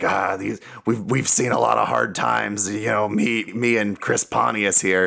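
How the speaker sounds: gravelly put-on voice. Imitating someone looking back on hard times: Steve-O impression. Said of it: "That's a good impression".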